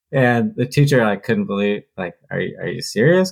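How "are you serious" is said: put-on nervous laughter, slower. Retelling a teacher reacting to a student's answer, imitating nervous laughing. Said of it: "Kind of like laughing nervous".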